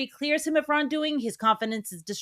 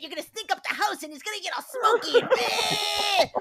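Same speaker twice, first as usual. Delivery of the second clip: very high, petulant, acted hissy-fit tantrum voice; 11 semitones higher than usual. Retelling a partner's complaint about a quesadilla: imitating someone throwing a hissy fit. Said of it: "threw such a fucking hissy fit".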